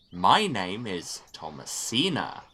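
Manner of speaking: very slow, spelled-out, carefully enunciated speech. Mocking a game character's introduction, imitating Thomasina talking to a six-year-old. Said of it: "she always sound like she's introducing herself to a six-year-old".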